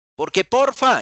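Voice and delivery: high, loud, excited shouting.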